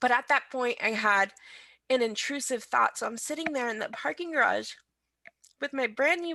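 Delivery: tearful speech, crying through the words. A new mother sharing a hard early-motherhood memory, crying while speaking. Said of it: "I'm sorry, I'm crying".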